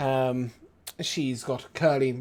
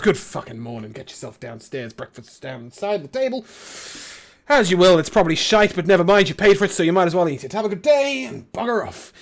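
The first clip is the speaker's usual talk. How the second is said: griping, complaining grumble rising into a rant; 5 semitones higher, 5 dB louder than usual. A character with a broom walks on past the players, grumbling. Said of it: "as he grumbles on past you, and he goes".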